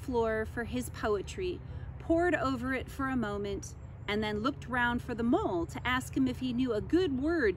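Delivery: ordinary delivery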